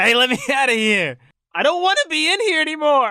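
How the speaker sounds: loud, very high, full-blown tantrum. A game player speaking as Tobias, throwing a tantrum. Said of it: "Tobias starts throwing a tantrum".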